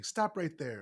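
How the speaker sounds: synthetic, robotic, machine-like voice. Speaker narrates a scene where a voice stops a thief; robotic synthesized voice. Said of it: "by a robotic synthesized voice saying".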